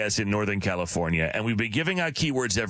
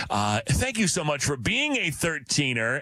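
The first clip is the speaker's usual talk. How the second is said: usual speaking voice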